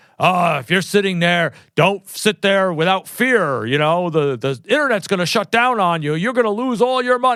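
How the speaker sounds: big, rugged, urgent, gruff advertisement announcer voice. Mocking a fear-driven ad, the speaker imitates its veteran spokesman, big rugged ad voice. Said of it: "he comes on with this big rugged voice".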